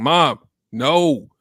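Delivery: put-on firm, stern tone. Retelling saying no to Mom after many requests: imitating own stern voice. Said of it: "get a little stern with my voice".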